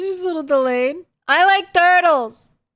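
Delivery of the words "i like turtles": high-pitched yelling. Speaker on mic right after a delayed clip plays: shouting too loudly. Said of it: "I shouted that a little too loudly straight into the mic".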